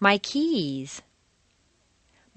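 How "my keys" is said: "keys" stressed with falling pitch. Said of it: "Use your rubber band for each stressed word".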